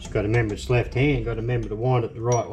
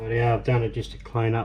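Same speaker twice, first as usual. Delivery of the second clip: ordinary talk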